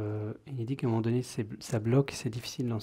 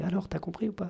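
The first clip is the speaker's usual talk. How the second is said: put-on tiny, high, childlike little kid voice; 7 semitones higher than usual. Acting out a child who asks if you've understood: small child's voice. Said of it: "avec sa petite voix d'enfant".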